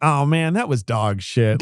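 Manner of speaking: slow, drawn-out, cringing groan. Retelling an actor's reaction after every take: imitating Kris Kristofferson cringing. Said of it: "he'd cringe and be like".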